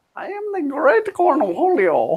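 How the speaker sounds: very high cartoon voice, swooping wildly. Between talk about movies, the speaker suddenly does a Cornholio voice. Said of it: "both of y'all sound like them".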